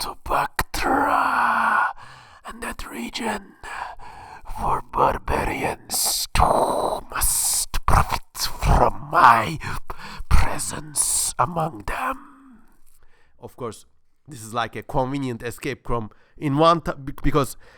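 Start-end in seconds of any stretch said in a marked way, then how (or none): 0.0-12.6 very slow, breathy whisper. Reading a passage aloud in the Independence Day alien voice. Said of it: "reading this in the voice of the alien in Independence Day".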